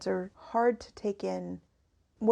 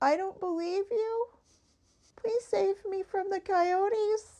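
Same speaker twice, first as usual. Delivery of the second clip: high, pleading, begging cat voice; 12 semitones higher than usual. Voicing a nervous pet cat begging to be saved: voicing the cat Sokka, pleading. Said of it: "The way that he did it was just".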